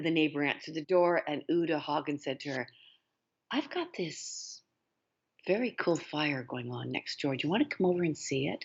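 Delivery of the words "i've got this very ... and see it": really calm, casual, unruffled, sing-song. Telling a story, quoting what a woman said to her neighbor: retelling a calm remark. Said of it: "In a really calm voice".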